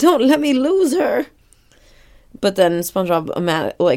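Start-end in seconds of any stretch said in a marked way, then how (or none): 0.0-1.3 put-on tearful pleading, higher and louder. Retelling a cartoon scene, imitating someone crying while pleading. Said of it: "because he's crying".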